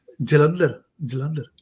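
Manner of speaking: ordinary talk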